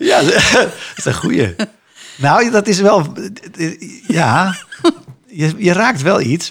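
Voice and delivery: high, loud speech while laughing.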